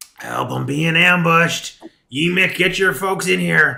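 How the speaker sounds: very loud, frantic, shrill goblin shout. Running the game for the players, the speaker voices an ambushed goblin, goblin voice. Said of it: "I'm losing the voice".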